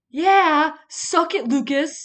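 very loud, high, booming, drawn-out scream. Retelling unwrapping a christmas gift from dad as a child, retelling a childhood scream. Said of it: "unwrapped it and screamed".

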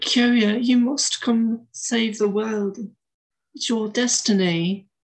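put-on posh British accent. Describing an anime dub, quoting the character's line: Sayaka's posh British accent. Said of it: "It's like a posh British accent".

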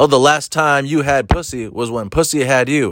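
acted smug, confident tone. Retelling a heckler's line during a comedy set: imitating a smug, confident heckler. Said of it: "she said it with the confidence like she just made it up".

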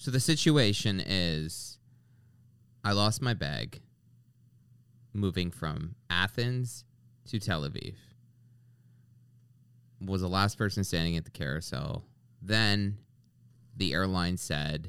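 drawn-out, mournful, slow and sad. Explaining a situation to someone who just arrived, slow and sad. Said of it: "You're saying it so slow".

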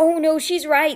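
slow, drawn-out groan of dismay. Narrator reads a character conceding that a friend is right, groaning. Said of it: "Sticky groaned".

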